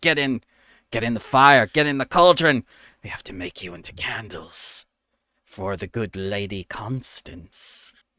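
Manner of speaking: rough, gruff-sounding voice. Narrating the scene, a voice from the other side speaks, gruff voice. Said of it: "you hear a gruff voice from the other side saying".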